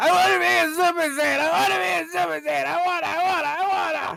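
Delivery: put-on whiny crying. Imitating Joe Biden whining like a crying child: imitating someone whining, crying. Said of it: "just crying like a bitch".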